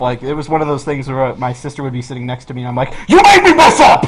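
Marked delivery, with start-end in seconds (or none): 3.1-4.0 put-on furious, very high, loud frustrated outburst. Recalling blaming a sister sitting next to them at a game: retelling being pissed off. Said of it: "it got me so pissed off".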